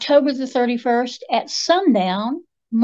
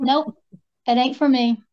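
ordinary talk

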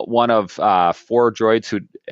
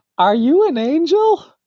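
squeaky, very high-pitched cartoon creature voice; 3 dB louder than usual. Acting out Anakin opposite Padme for a friend, using a Jar Jar voice. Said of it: "I'll use the same voice as Jar Jar".

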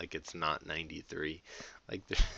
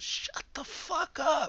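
very high, really loud, shrill, drawn-out yell; 6 dB louder than usual. Describing a movie scene, retelling a really loud shout. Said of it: "Like really loud".

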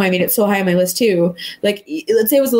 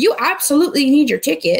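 put-on nasty, mean tone; 5 semitones higher than usual. Complaining about a scene, the speaker mimics the conductor, imitating a nasty conductor. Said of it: "the nastiest person who's like".

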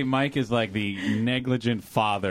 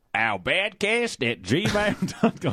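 higher put-on accent of a cranky old Australian; 9 semitones higher than usual.

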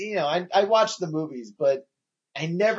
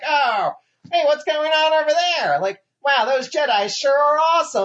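mock dumb robot voice, much higher pitched; 10 semitones higher, 4 dB louder than usual. Complaining about a game's infantry bots, imitating dumb infantry robots. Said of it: "these stupid infantry bots".

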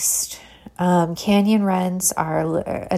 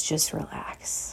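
very gentle soft voice, quieter; 2 semitones lower, 12 dB quieter than usual. Voicing the inner voice that helps when making something new: very gentle, soft voice. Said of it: "this very gentle, soft voice that says".

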